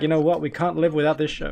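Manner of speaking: ordinary delivery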